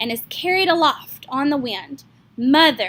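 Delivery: ordinary delivery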